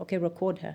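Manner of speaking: ordinary delivery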